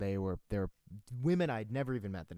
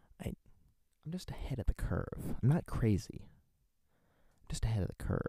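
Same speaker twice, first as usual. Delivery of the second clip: put-on villain voice. Doing voices requested in the comment feed, Joker voice. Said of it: "that sounds like my Joker voice".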